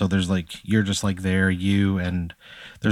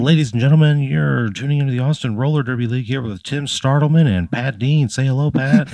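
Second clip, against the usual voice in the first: loud, raised, passionate sports announcer voice; 6 semitones higher, 5 dB louder than usual. Describing how a roller derby match broadcast opens, imitating Tim Startleman announcing. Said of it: "He wears a fucking sport coat to every match".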